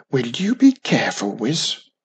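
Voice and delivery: grumbled complaining tone. Wisby speaks to cousin Wiz as the dragon steps toward her, grumbling. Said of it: "Grumbled Wisby".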